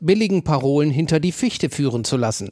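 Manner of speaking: ordinary delivery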